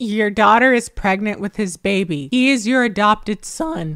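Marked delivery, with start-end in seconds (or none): none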